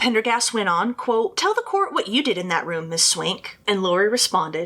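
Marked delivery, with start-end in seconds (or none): none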